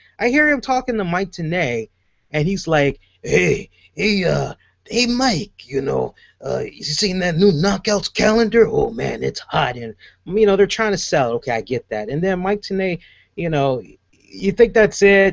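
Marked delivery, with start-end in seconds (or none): 3.2-9.8 gravelly, creaky cartoon-style voice. Imitating a commentator talking to a colleague: Spike from Tom and Jerry voice. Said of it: "he just sounds like Spike".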